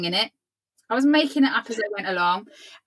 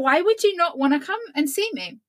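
put-on confused tone, higher; 5 semitones higher than usual. Retelling when the phone never rang: imitating own confused past self. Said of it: "really confused".

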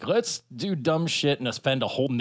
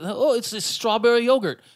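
put-on weird Australian accent, much higher; 10 semitones higher, 4 dB louder than usual. Speaker slips into a put-on voice mid-talk; weird Australian via John Travolta accent. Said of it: "my like weird Australian via John Travolta accent".

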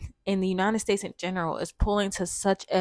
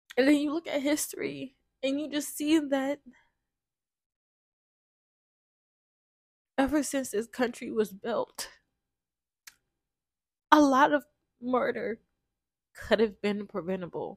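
sad, sorrowful tone, higher pitch; 5 semitones higher than usual. Speaker trying to stay calm and reserved with their language, sad. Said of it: "I'm so sad right now".

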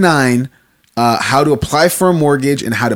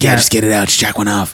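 low cartoon monster character voice; 5 semitones lower than usual. Chatting about a show, speaker imitates how a character talks: Hormone Monster voice. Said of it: "he talks like this".

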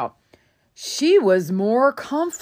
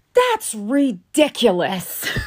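mock yelling, acted shouting; 3 semitones higher than usual. Telling how she reacted to the answer, retelling her yelling. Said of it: "She starts yelling".

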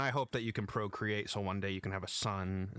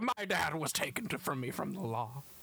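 high, yelled-out outburst, pitched up; 7 semitones higher than usual. Quoting a game character's line about his dad: imitating Jack Marston yelling. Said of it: "yelling out".

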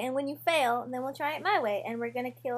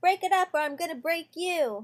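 menacing, scary voice with raised pitch; 5 semitones higher than usual. Charging at the group in character to intimidate them: scary yell.

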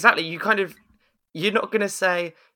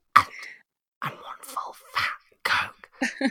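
hushed, soft, breathy whisper; 8 semitones higher, 6 dB quieter than usual. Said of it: "leaned in towards me and whispered".

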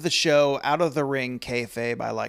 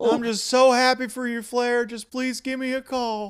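very high-pitched, sad, pleading voice; 11 semitones higher than usual. Acting out Terry's voicemail to Flair, imitating Terry's sad voice. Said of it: "Terry's voice is so sad".

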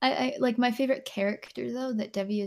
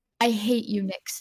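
put-on passionate outburst. Retelling what a friend shouted at them: imitating a passionate outburst. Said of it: "he said it so passionately".

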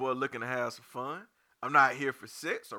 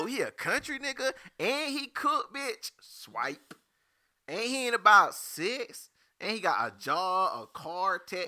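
put-on slow, drawn-out voice; 6 semitones higher than usual. Speaker acts out someone swiping on a dating profile, put-on ratchet voice. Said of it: "Why are you talking to your ratchet voice?".

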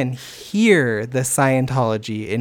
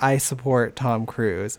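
plain

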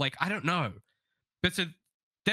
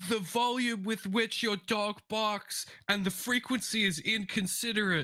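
raised, pitched-up complaining yell; 8 semitones higher than usual. Retelling a neighbor's complaint about a barking dog, imitating a neighbor yelling. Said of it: "he's yelling, going like".

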